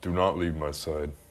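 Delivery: hushed, soft half-whisper under the breath. Speaking in character to another player's character in the game: half-whisper. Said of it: "I'm gonna whisper to him".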